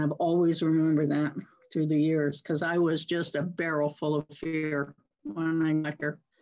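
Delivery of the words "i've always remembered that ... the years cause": plain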